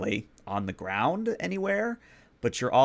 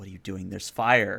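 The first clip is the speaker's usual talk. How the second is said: snarling creature voice; 3 semitones lower than usual. Game master voicing the player character's inner beast, snarling beast voice. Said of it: "the beast snarls and says".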